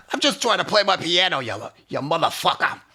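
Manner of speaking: piercing put-on New Jersey accent. Riffing on a voiceover woman's delivery, in a piercing Jersey accent. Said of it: "piercing Jersey accent".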